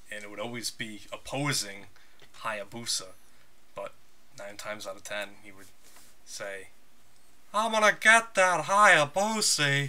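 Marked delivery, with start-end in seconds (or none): 7.5-9.9 put-on old-school wrestler voice, loud, pitched up, yelled. Quoting what he'd always say wrestling in Japan, Terry Funk voice. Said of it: "doing that Terry Funk voice".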